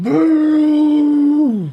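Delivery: creature shouting. Narrating to players as a creature pulls back into rage: creature yelling. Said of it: "and it just yells".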